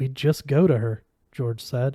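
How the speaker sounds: ordinary delivery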